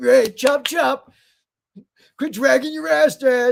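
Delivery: high, loud, bossy, sassy talking dog voice. Voicing the dog hurrying its owner at snack time, putting on a sassy dog voice. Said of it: "he gets a little sassy in his talk".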